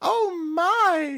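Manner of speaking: fake innocence, flustered, very high and loud.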